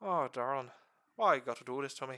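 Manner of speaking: put-on Irish-accented delivery. Going over forty K lore, switching into an Irish accent. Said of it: "let's do this in Irish accent".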